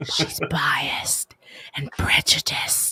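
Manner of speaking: ASMR-style breathy voice. Asked to say it again in that breathy voice: a breathy ASMR whisper. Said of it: "A S M R [name]".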